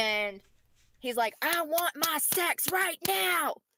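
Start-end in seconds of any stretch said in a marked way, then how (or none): 1.4-3.5 very slow, high, dragged-out screaming. Retelling how a partner got in her face: imitating him screaming. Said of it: "screaming at me".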